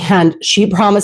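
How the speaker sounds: normal talking voice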